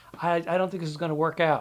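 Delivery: ordinary delivery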